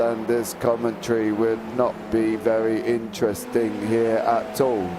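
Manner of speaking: flat, monotone, droning robot voice. Showing how this commentary would sound in a robot voice. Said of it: "If I was a robot, it would sound like this".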